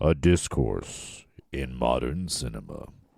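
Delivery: very deep, low movie trailer narrator delivery. A speaker tries out an intro line: movie trailer voice. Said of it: "That's even trailer voice".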